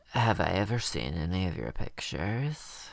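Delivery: flirty woman's voice, laying it on strong. Recapping an episode, doing an impression of the woman coming on to him. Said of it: "I'm going to do an impression of the woman right now".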